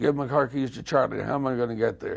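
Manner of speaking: ordinary delivery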